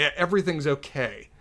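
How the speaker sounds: acted very heavy sarcasm. Recapping a scene where one character checks on another, a mock-sarcastic reply. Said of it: "very sarcastically".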